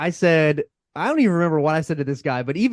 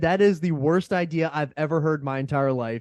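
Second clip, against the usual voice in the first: usual speaking voice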